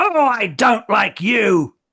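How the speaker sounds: very loud, high, drawn-out yell. Voicing a creature seared by a spell: shouting. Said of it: "he shouts out".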